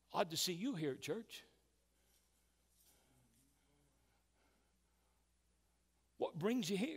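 very sarcastic, snide, mocking delivery. Retelling what a pastor said to a man at a church fire: retelling a sarcastic remark. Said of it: "in a very sarcastic way".

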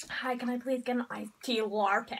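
put-on American accent. Pretending to order in a shop, put-on American accent. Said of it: "go into the shops and speak American".

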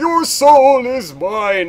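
crazy, high, booming, slow, echoing voice. Recounting what the Dremora in the game says to you: crazy echoey Dremora voice. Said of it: "talks to you in the crazy echoey voice. He's like".

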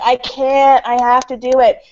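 very slow, crying, sob-broken words. Retelling how he answered her pleas to stop on set: imitating sobbing. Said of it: "And he was just sobbing".

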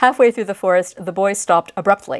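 ordinary talk, nothing marked

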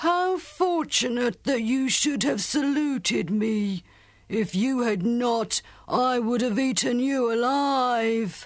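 booming giant ogre's roaring bellow, high-pitched. Reading the giant ogre's reply to the Khan's greeting, roaring. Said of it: "roared the dev".

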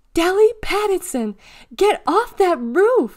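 very high, shrill, very loud shout. The recess monitor spots a girl up on the school roof, shouted. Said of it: "she shouted".

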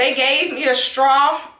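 voice cracking and breaking up mid-line. Describing a drink and straw from a food order, voice cracking. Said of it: "My voice cracking up".

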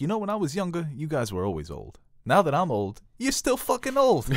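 put-on swooping Italian-American wiseguy accent, pitched very high. Quoting Paulie from The Sopranos meeting old friends: Paulie Italian accent. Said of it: "You do a good Italian".

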